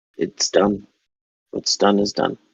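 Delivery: dead-level, very monotone, flat pitch. In a story scene, a woman clenching her fists answers an apology in a very monotone voice. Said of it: "in a very monotone so voice says".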